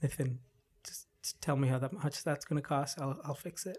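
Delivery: whisper. Retelling what the boss said at the end of the day, imitating a whisper. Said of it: "He like whispered".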